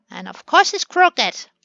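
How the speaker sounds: irritated, loud, annoyed shouted outburst. Planning a staircase and finding it crooked, speaker yells in annoyance. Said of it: "Sorry for yelling".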